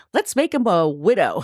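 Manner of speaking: ordinary talk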